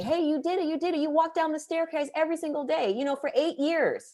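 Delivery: put-on very high, small child's voice. Imagining her eight-year-old self congratulating her, in a child voice. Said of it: "I'm thinking of a child voice saying".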